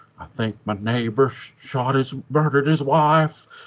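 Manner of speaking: stumbling, halting, badly done delivery. Quoting a line while watching Rear Window as Jimmy Stewart. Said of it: "that's an impression of Jimmy Stewart".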